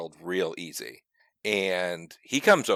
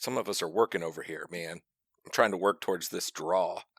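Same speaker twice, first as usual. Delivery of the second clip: plain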